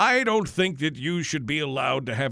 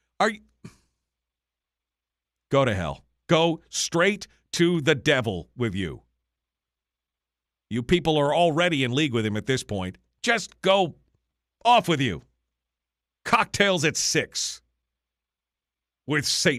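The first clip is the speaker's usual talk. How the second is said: agitated, worked-up rant; 3 semitones lower than usual. Ranting at people who would tell them what to do: worked up, agitated rant. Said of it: "I'm so worked up over this".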